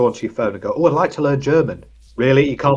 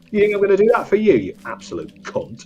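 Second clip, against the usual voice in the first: put-on abusive voice, aggressive and insulting; 9 semitones higher than usual. Acting out a phone that insults its owner: voicing an aggressive insulting phone. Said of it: "the insulting".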